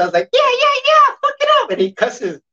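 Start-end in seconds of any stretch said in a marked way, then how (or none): 0.3-1.7 very high puppet-character voice. Retelling the voice done for a son: Elmo voice. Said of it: "it was an Elmo voice".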